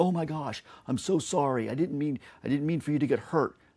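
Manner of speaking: high, loud, panicked, terrified voice. Acting out a parent running terrified to a fallen child: acting out a terrified parent. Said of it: "If you run to them terrified".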